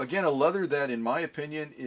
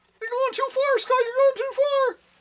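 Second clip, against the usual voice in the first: excited, very high-pitched little voice; 6 dB louder than usual. Voicing a sewing machine warning about pushing too far: excited featherweight voice. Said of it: "the voice of the featherweight telling me".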